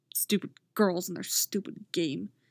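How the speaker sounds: muttered under breath. A boy, annoyed at the girls' game, mutters. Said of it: "He mutters".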